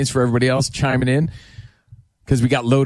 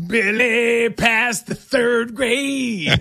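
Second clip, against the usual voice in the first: put-on high, slow goofy voice, childish and bragging. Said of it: "to Billy out there, I just wanna say".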